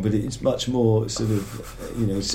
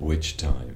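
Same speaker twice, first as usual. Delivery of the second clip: hushed, very quiet, low murmur; 7 semitones lower, 5 dB quieter than usual. Retelling his reply when asked at the table about jail, in a very quiet voice. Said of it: "in a very quiet voice".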